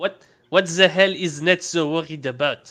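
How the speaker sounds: put-on French accent. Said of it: "now you have to read it in French".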